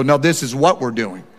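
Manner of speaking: added bass, firm and final delivery. Retelling telling the family the plan: retelling with a little bass in voice. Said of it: "I had to put a little bass in my voice".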